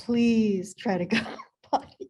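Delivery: play-acted, begging, pleading tone. A mother recalls potty training her toddler, retelling a begging plea. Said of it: "So I would just beg him".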